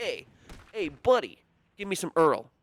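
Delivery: mock New York street accent. Imagining someone in New York asking for oil: New York accent. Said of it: "You don't go to New York and someone's like".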